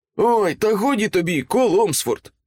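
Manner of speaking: bright, happy, cheerful, high outcry. Morgan answers the younger brother, exclaiming cheerfully. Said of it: "вигукнув Морган весело".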